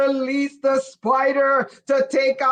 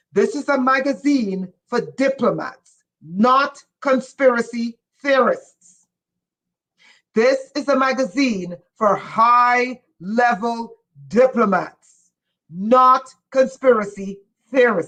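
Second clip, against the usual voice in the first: eager, worked-up, excited, word stretched up high; 2 semitones lower than usual. Showing viewers a magazine, excited rather than yelling. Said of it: "I'm not yelling, I'm excited".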